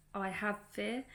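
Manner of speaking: plain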